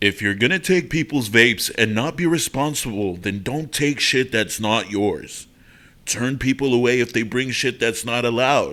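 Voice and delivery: epic, dramatic movie trailer announcer voice. Trying to make a voice: movie trailer narrator voice. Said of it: "sound like a fucking movie".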